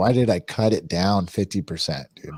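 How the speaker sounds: normal talking voice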